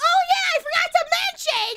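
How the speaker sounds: very high, loud yelling outburst. Talking to chat, suddenly interrupting yourself to remember something: yelling. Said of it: "Sorry for yelling".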